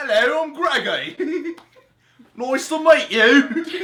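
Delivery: very high, loud, slow, posh British accent. Speaker introduces himself as Greggy in a classy British accent. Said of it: "sound like classy British".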